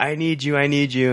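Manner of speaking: mock screaming, high-pitched, repeated. Retelling a movie scene where Harry tells Electro he needs him: imitating Harry screaming. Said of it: "he's screaming, like".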